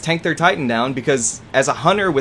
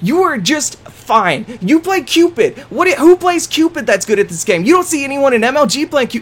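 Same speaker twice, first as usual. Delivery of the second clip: put-on yelling rant, higher and louder; 10 semitones higher, 5 dB louder than usual. Retelling a teammate's rant into his microphone: imitating someone yelling. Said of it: "He is yelling into his microphone".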